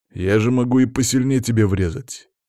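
usual speaking voice

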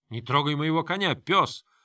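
mild, held-back angry yell, pitched high. A surrounded man yells at the one holding his horse. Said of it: "заорал Франк".

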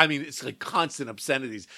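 normal talking voice

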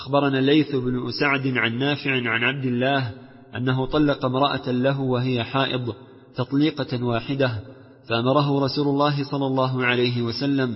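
ordinary talk

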